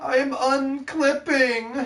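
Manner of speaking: very high-pitched voice. Repeating what the other speaker just exclaimed: imitating the other speaker's voice. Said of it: "mirrored my voice".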